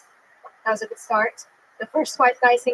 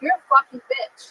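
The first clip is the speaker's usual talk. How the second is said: abusive, insulting tone, pitched up; 6 semitones higher than usual. Retelling what abusive men she dated told her, imitating an abusive boyfriend. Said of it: "You'll tell me shit like".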